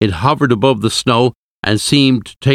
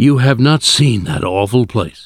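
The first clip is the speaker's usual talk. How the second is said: soft, hushed whisper. A husband answering the professor after a long pause, whispered. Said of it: "he whispered at last".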